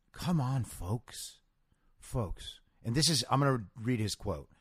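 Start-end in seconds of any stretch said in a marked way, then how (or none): 0.2-1.4 very quiet, breathy, gentle sensitive voice. Imitating how he begged people to take vaccines, quiet, sensitive Joe Biden voice. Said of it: "He puts on this very quiet and sensitive voice".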